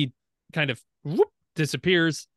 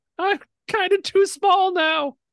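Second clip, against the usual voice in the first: tiny, small voice shouting out loudly; 5 dB louder than usual. Storyteller voicing a tiny voice that shouts out, tiny shouting voice. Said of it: "You hear this tiny voice shout".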